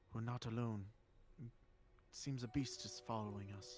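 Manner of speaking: speaking in a hush. Game master voicing a character who senses a wolf tracking the party, in a hushed voice. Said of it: "in a hushed voice".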